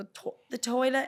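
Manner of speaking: put-on playful London accent. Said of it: "We're playing with accents right now".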